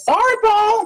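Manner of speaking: very high, loud shouted call. Answering a noise from downstairs in character: yelling over the shoulder. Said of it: "yell over my shoulder".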